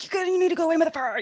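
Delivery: very high, shrill, loud yell. Speaker retells yelling at a thing in a dream, retelling a yell. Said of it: "I just like yelled at it".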